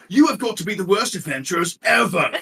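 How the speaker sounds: bad put-on British accent. Voicing a troll insulting the adventurers: British accent. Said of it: "The one with the British accent's like".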